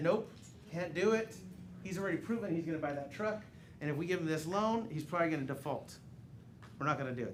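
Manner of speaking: ordinary talk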